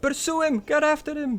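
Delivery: very high screamed delivery. Voicing a wizard character in a game scene: screaming. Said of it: "she just screams out".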